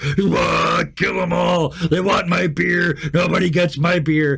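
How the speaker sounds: high-pitched roaring yeti monster voice. Narrating the scene, voicing the yeti the listener rides across the square: roaring yeti voice. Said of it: "the roar of the yeti".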